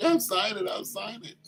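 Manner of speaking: put-on high, tearful talking through crying. Retelling a bride agreeing to sign the prenup: imitating someone crying. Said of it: "She's crying while she's like".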